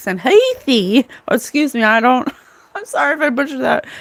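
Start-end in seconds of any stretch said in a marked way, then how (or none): 0.2-1.1 put-on "heathy" said in an Australian accent. Repeating how someone says his nickname, with an australian accent on 'heathy'. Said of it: "he says it in an Australian accent".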